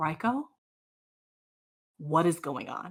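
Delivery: soft, hushed half-whisper under the breath. Voicing a character who starts to half-whisper after a door closes: half-whispering. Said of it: "she begins to kinda, like, whisper".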